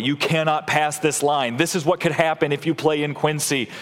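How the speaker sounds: plain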